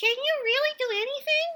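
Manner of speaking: small, very high, piped-up voice. Reading a children's story, a squirrel calls up to Bear: Brown Squirrel's little voice. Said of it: "a little voice spoke up from the ground".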